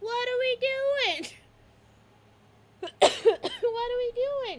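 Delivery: squeaky, tiny, very high puppy-like shout. Narrating a scene, voicing the puppy as it shouts: tiny little voice shouting. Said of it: "You hear a tiny little voice shout".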